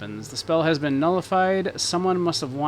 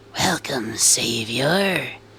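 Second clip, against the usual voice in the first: raspy, rasping creature voice; 3 semitones lower than usual. Narrating a game scene, you repeat the creature's greeting to the hero in a raspy voice. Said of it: "it says in a raspy voice".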